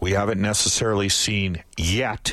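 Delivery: slight stress on the word yet.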